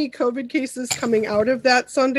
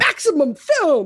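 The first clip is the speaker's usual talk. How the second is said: hyped-up voice with extreme energy. Saying the name maximum film the way he likes to, with hyped-up extreme energy. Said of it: "I like to say it with like that sort of early 2000s like Mountain Dew Extreme energy".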